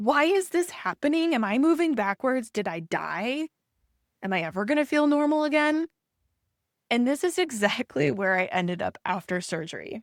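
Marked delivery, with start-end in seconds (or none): 0.0-5.9 high-pitched inner voice, screaming. Acting out the mind's reaction during an in-between phase: imitating a screaming mind. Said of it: "your mind in this interim is screaming".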